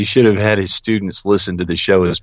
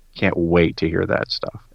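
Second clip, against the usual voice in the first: usual speaking voice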